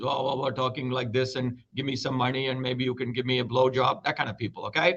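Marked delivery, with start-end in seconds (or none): 0.0-4.0 scornful, derisive caricature of a guru. Imitating gurus who ask for money: mocking guru impression. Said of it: "these gurus who would wear their beards".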